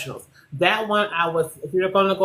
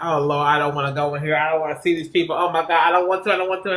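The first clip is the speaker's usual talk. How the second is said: shy, anxious, reluctant and nervous voice. Speaker retelling what she says before going in, imitating nervous dread. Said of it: "I'm a nervous girl".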